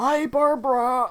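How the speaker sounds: put-on old man voice. Saying goodbye to barbara, who just left, in an old man voice. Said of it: "say bye with the old man voice".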